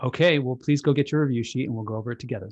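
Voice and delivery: steady, firm, no-nonsense tone. Acting out a parent answering an exasperated child about a test, speaking firmly. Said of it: "Now the parent says firmly".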